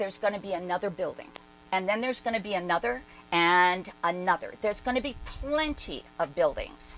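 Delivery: normal talking voice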